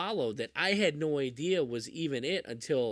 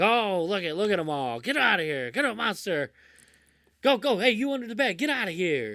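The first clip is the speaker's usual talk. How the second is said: loud, shrill, irritated, fed-up yelling; 6 semitones higher, 6 dB louder than usual. Retelling a movie scene where the dad shoos monsters: imitating a pissed-off dad. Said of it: "the dad's all pissed off".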